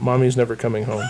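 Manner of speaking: mock dead-serious, flat, no emotion at all. Acting out a line once said about his mom, mock-serious deadpan. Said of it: "You said that real serious into the mic. / if I gave it to him deadpan like that".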